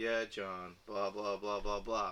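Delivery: dead-level, unvarying, flat monotone drone. Describing how Garfield talked in the cartoons; monotone Garfield impression. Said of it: "he was always really monotone".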